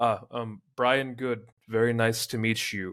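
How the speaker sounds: halting broken English. As the man beside him, turning to greet Brian Good: broken English accent. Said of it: "do a broken English accent".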